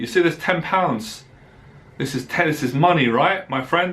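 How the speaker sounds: ordinary delivery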